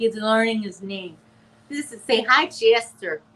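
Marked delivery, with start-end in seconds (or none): 2.1-3.2 loud, doting, put-on grandma accent. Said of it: "I love how Granny D says her name".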